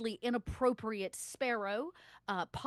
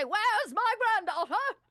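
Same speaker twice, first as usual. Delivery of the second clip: very high-pitched, demanding character voice; 10 semitones higher, 7 dB louder than usual. Voicing a character at the door asking for his granddaughter: Septimus Gooley voice. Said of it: "you hear him say".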